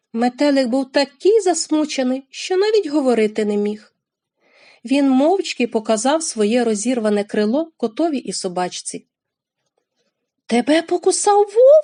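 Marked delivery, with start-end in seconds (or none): 10.5-11.9 very high, loud, frightened outcry. Narrator reads a character seeing the butterfly's torn wing, frightened exclamation. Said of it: "перелякано вигукнув Рорчик".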